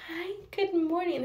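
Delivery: bright, lifted, called-out voice. Retelling greeting a cat on waking: imitating own big-smile greeting. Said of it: "this big, huge smile".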